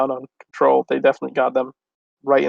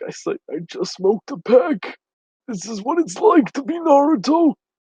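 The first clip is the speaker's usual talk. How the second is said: very high, hoarse rasp, slow and drawn out; 11 semitones higher than usual. Speaker mocks Naruto as a heavy smoker; hoarse Naruto voice. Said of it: "sounds like he lost his voice".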